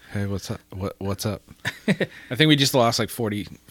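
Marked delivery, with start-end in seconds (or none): 0.1-1.4 put-on dumb, dopey cartoon teen voice. A co-host greets the other at the start of a podcast, Beavis and Butt-Head impression. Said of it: "That was a Beavis and Butthead impression".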